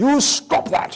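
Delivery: put-on high British accent. Recalling the words the british father always said to him, father's british accent. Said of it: "with his British accent".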